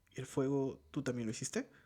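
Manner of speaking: plain reading voice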